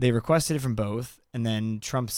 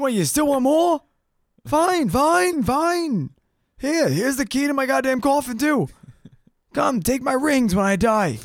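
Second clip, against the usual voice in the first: put-on grumpy old politician voice, higher and louder; 6 dB louder than usual. Mocking how the politician would answer a demand for more years. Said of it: "He's like".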